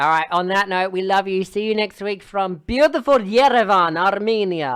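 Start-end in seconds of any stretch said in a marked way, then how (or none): 1.4-4.8 Russian-accented voice. Signing off the show to listeners, in a Russian accent. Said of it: "that was a Russian accent".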